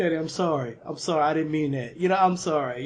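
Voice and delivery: put-on crying, tearful, pleading voice. Retelling apologizing to his father after an argument: imitating own past crying apology. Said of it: "I'll be fucking crying".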